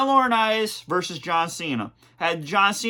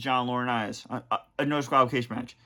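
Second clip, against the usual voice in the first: plain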